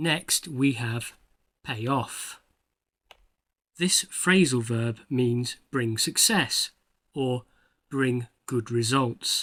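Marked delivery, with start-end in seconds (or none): 1.6-2.4 off strongly stressed and emphasized. Pronunciation lesson on a phrasal verb, stress on off. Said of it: "you may have noticed that I emphasized the second word".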